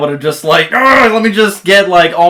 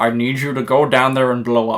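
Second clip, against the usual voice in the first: put-on Scottish voice, lower and quieter; 4 semitones lower, 6 dB quieter than usual. Imitating a villain settling for a small victory: Sean Connery voice. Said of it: "I'm still in Sean mode".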